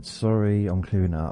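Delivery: lightly called out. Recounting calling out to a neighbour at the window, retelling a shout. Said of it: "and I shouted".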